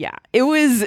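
ordinary talk

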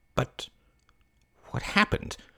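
tense, taut, curious whisper. A lady presses a hired man for details, voice taut with curiosity. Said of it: "her voice taut with curiosity".

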